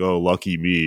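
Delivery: ordinary talk, nothing marked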